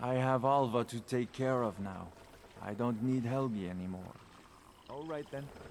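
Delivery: flat, emotionless deadpan delivery. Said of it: "You speak in a very deadpan way".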